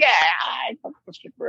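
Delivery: put-on done-with-it, whatever tone, slow and high. Retelling what a cast member said, imitating someone who is over it. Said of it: "you could tell that she was over it too".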